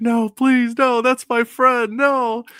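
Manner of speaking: put-on very high, drawn-out, pleading, begging yell. Retelling how a player in a shooting game pleaded: imitating someone yelling.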